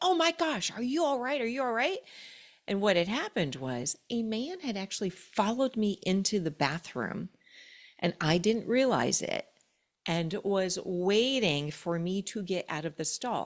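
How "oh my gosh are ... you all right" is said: rapid-fire, high, rushed screaming. Retelling how a woman in the bathroom kept screaming to the speaker: imitating a woman screaming. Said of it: "she kept on like screaming".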